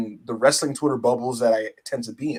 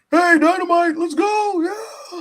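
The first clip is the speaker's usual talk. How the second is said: very high, loud, drawn-out hype call; 5 dB louder than usual. Retelling how Tony Khan hypes the crowd between matches: imitating Tony Khan hyping the crowd. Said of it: "Tony Khan would kinda come out in between and just be like".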